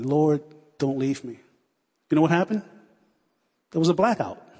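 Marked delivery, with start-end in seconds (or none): 0.0-1.4 mock crying out, much lower pitch. Recalling being three and at her side, re-enacting her words; acting out crying out to God. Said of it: "she was just crying out to God".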